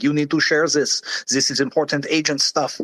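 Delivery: clumsy, bad, crisp put-on French accent. Hearing the agent's voice in their head while scrolling, bad AGI impression, French accent. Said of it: "my worst impression of A G I".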